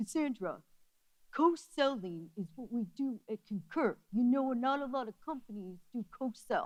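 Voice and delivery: soft, put-on New York accent. Retelling a Concur man's reply to the speaker's co-sell pitch: imitating Mike's New York accent. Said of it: "so he has a New York accent".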